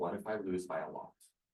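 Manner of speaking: very quiet, hushed, small voice. Speaker recounts asking her if she is okay; retelling a very quiet voice. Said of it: "this very quiet voice".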